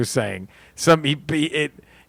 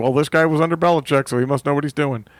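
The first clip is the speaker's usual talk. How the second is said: plain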